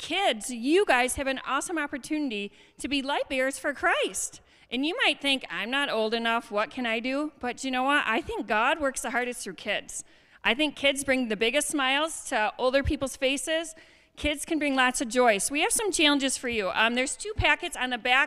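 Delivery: loud, projecting teacher voice. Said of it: "I'm just gonna yell really loud, get out my teacher voice".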